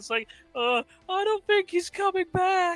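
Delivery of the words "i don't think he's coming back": tiny squeak, very high pitched. Retelling a scene after Axis flies off, voicing Teen: squeaky Teen voice. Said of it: "squeaky voice Teen comes in".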